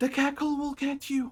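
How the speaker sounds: put-on very high, childlike little girl voice. A game master voices someone behind the group, in a feminine, childlike voice. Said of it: "It's a feminine, childlike voice".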